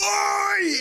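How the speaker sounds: loud jeering shout. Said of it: "was giving him shit the whole game".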